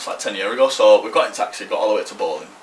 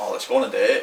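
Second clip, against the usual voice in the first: plain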